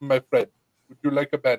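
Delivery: put-on thick, heavy Russian accent. Retelling how a man offered a band-aid after the speaker cut a pinky, in a thick russian accent. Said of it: "very thick Russian accent".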